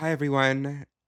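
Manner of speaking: yoga class instructor tone. Showing how they talk to their yoga classes: yoga class voice. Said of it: "Speak the rest of the episode like that".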